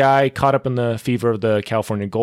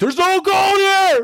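loud frustrated acted shout, higher pitch; 3 dB louder than usual. Retelling a story where a frustrated miner complains: loud frustrated shout, acting a character. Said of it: "Sorry, that was loud".

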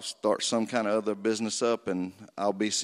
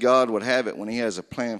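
ordinary delivery

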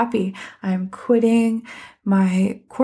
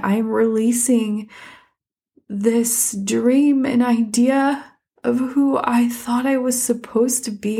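heartfelt, moved, emotional, slow and drawn-out; 2 semitones higher than usual. Talking about letting go of an engineering career, getting emotional. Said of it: "I'm getting emotional talking about it".

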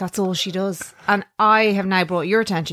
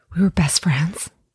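put-on breathy sigh before speaking; 2 semitones lower than usual. Imitating an actress's sigh before answering an interview question: Jennifer Aniston impression.

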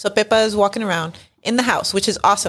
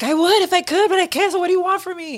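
put-on, very high-pitched yelling; 13 semitones higher than usual. Recounting a scene where a woman yells at her mother, mock-yelling like a daughter. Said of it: "she's yelling at her in like such a daughter kind of way".

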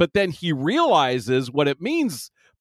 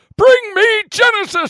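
loud, high-pitched villain yell; 7 dB louder than usual. While discussing Star Trek II, break into an attempted Christopher Lloyd impression. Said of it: "That is my attempt at Christopher Lloyd".

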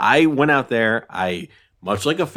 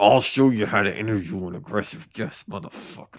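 aggressive put-on voice, pitched much lower; 3 semitones lower, 4 dB quieter than usual. Showing the other speaker how to interview an aggressive guest: Golden State Killer voice. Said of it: "You sound like the Golden State Killer".

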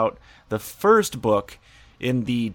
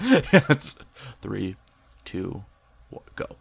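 hushed, near-whispered delivery. Redoing the countdown after being told he sounded like Sean: imitating Sean. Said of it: "a mere imitation of what Sean can do".

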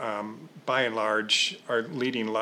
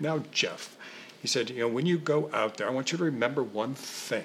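clumsy, mangled, bad British accent; 2 semitones higher than usual. Retelling what John said to him backstage, imitating John's British accent. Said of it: "in his very British accent, which I'll brutalize here".

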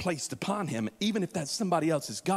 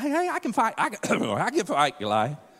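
put-on cracking boy voice, much higher, slower; 4 semitones higher, 5 dB louder than usual. Retelling the David and Goliath story, voicing David: David's put-on crackling teen voice. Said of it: "His voice is crackling".

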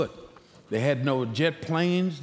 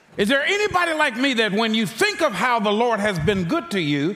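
raised, high preaching voice building toward shouting; 8 semitones higher, 5 dB louder than usual. Speaking to a crowd about how good the Lord has been, with a raised voice. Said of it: "I didn't mean to raise my voice".

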